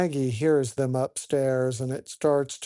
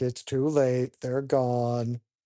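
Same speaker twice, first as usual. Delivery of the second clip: usual speaking voice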